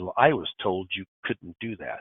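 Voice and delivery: quiet, very stern, matter-of-fact voice. Retelling a woman's reply to the speaker's explanation of benefits, imitating a stern voice. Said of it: "she says very sternly".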